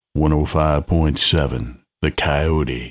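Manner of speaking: very low, country-style radio announcer voice. Playing a radio voiceover done earlier: Sam Elliott voice. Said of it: "Sam Elliott".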